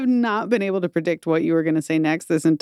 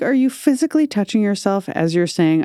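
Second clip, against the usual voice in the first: plain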